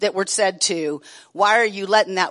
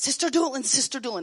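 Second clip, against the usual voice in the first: high-pitched, completely unglued excitement, acted out; 6 semitones higher, 6 dB quieter than usual. Retelling a little old lady's news after prayer: imitating someone coming unglued. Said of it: "gonna come completely unglued".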